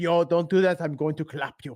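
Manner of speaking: hostile, menacing, angry tone. Describing a German host of daily spaces, the speaker imitates Buva sounding angry. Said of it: "he's always sounds like he's angry".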